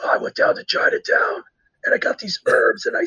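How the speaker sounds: imitated voiceless speech. Retelling a man who kept trying different things, imitating his lost voice. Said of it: "he would sound like this".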